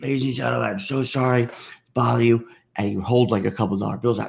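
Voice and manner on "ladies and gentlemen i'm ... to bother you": practised, pleading delivery. Retelling a young panhandler's pitch on the train: imitating a panhandler's plea. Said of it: "the same shtick he had. He goes".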